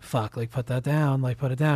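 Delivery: quiet muttering under the breath. Speaker retells a scene where a man watches a kid pick up a bazooka; muttering to himself. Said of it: "kind of like muttering like".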